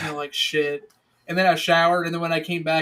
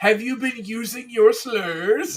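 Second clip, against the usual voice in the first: put-on jolly old man voice; 6 semitones higher than usual. Correcting how Santa Claus says the line: Santa Claus voice. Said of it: "That's how he says it".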